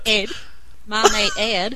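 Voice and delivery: put-on American accent. Challenged by co-hosts to try an American accent, fake American accent. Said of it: "have [name] try and do an American accent".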